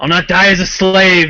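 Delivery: loud, defiant, battle-cry style yell. Playing a character on the battlefield, answering an opponent by yelling out. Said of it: "I'd yell out, um, matching his volumes".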